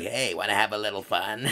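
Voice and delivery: clumsy, low, fake creepy menacing voice. Quoting a horror parody's killer in a bad Ghostface voice. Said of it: "the voice your friend trying to mimic Ghostface would sound like".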